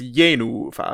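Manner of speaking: accented 'ye', first-syllable stress, long second syllable 'nu'. Explaining how to pronounce Yenufa, stress on first syllable 'Ye'. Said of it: "an accented first syllable and a long unaccented second second syllable".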